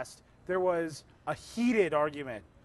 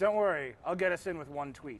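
usual speaking voice

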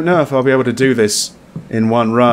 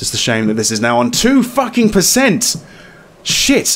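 panicking, audibly panicked voice; 4 semitones higher than usual. Streamer mid-game talks to viewers, panicking. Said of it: "I'm kind of panicking, as you can probably tell on my voice".

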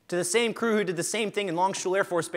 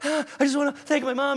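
put-on huffing and panting, higher pitch; 8 semitones higher than usual. Describing how a nervous new speaker actually sounds giving a talk: imitating huffing and puffing. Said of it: "what you actually sound like is".

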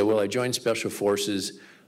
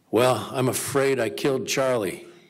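shaky, trembling, quavering voice; 3 semitones higher than usual. Retelling a survivor standing up at a reunion to confess: imitating a shaky voice. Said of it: "shaky voice".

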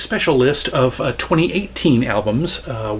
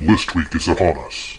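low, deep, booming, bombastic menacing voice; 8 semitones lower than usual. Host retries his show intro with the intended voice effect, low, deep and menacing. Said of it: "my voice goes really low and deep and kind of bombastic and menacing".

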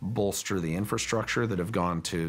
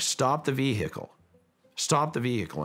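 mock, high, mild half-shouted yell; 5 semitones higher than usual. Retelling what the security professional in the back yelled, retelling a shout. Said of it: "starts shouting".

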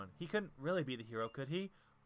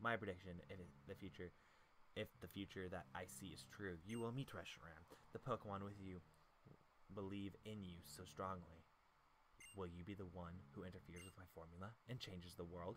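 very quiet, put-on character voice; 9 semitones lower, 12 dB quieter than usual. Speaker voices N addressing the player, quiet N voice. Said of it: "My voice is super quiet when I do N's voice".

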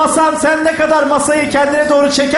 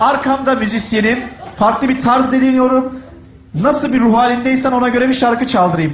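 ordinary talk, nothing marked

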